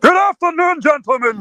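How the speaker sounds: puppet-like character voice. Answering a request to do the best Mister Isaacs impression: Mister Isaacs impression. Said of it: "best Mister Isaacs impression".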